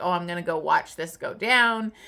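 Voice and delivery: ordinary talk, nothing marked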